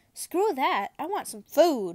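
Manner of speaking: full-blast, very loud, impatient yell. Narrator answers Draco, who told them to calm down, yelling. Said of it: "I yell".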